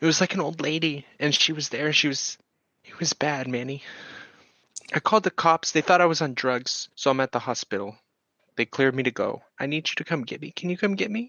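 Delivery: in tears. Voicing a character calling manny on the phone: in tears. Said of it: "she is almost immediately in tears".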